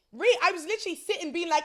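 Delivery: high, loud shriek with laughter.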